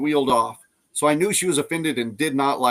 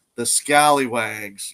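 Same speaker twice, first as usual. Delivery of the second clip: mock disdainful, scornful tone; 2 semitones lower than usual. Retelling what a girl in a wheelchair said about a group: imitating a disdainful remark. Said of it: "with a disdain on her face".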